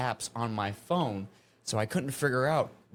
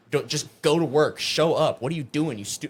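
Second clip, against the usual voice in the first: put-on angry scolding voice, louder; 3 semitones higher, 6 dB louder than usual. Retelling a nightmare where a coworker berated them: imitating someone berating. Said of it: "Hansel started to fucking chastise and berate me".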